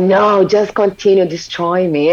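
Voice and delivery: acted crying. Retelling your own past reply to him, acting out crying. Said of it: "And I was crying".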